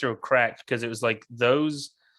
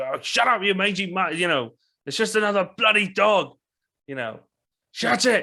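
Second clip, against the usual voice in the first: imitated loud shout, pitched much higher; 7 semitones higher than usual. Describing a guard yanking on a dog, the speaker acts out the guard's shouting. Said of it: "shouting and saying".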